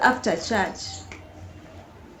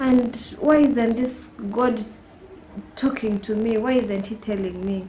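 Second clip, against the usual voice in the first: usual speaking voice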